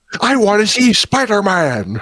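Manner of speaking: very high, swooping, grouchy, drawn-out voice. Asked to do it again, imitating J. Jonah Jameson: J. Jonah Jameson impression. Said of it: "Do it again".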